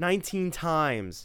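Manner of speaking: said with pride. Answering a woman frowning at the TV set; proudly. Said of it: "said Tim proudly".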